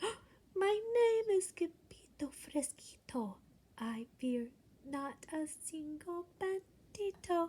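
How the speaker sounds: very soft, hushed, high, slow little voice. Narrator reads the sword fighter's reply to the bandito, in a very soft voice. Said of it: "in a muy muy soft voice".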